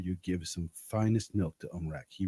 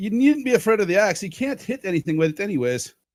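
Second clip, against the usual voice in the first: very loud, high, shouted call across a distance; 12 semitones higher, 9 dB louder than usual. Calling after someone who hops and starts to run away, yelling out. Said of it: "I yell out".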